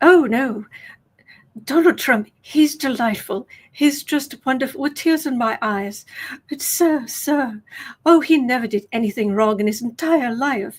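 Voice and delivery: mock upper-class English accent. Mocking a recorded interview answer with a posh English accent. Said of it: "she's got this very posh English accent".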